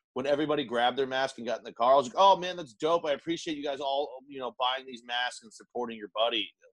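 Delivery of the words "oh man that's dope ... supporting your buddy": put-on, ironic, sarcastic appreciation. Retelling what was said to friends getting in the car: retelling a sarcastic remark. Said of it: "I'm sarcastic".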